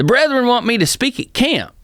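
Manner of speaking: put-on thick country accent with a very high voice. Retelling what a man with a thick country accent told him, thick country accent. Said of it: "he had this great thick country accent".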